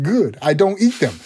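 put-on English spoken with a Puerto Rican accent. Retelling Vic Power's reply to the restaurant lady, in a Puerto Rican accent. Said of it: "in his Puerto Rican accent".

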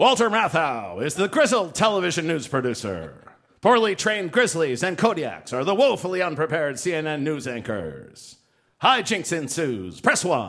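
automated phone-line listings announcer voice. Someone who rarely does impressions performs the next one in a Moviefone guy voice. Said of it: "in the voice of the movie phone guy".

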